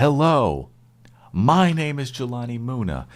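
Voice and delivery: booming, swooping, very high and loud excited delivery. Urging the other host to liven up his show intro, the speaker demonstrates: excited. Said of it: "I want to see you get excited".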